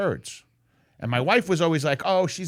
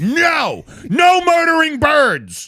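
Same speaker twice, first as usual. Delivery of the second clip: shrill, very loud, high, swooping, drawn-out yell; 12 semitones higher, 8 dB louder than usual. Recounting scolding the dog for going after baby birds, retelling a yell at the dog. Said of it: "I just yelled at it".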